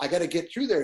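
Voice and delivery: ordinary talk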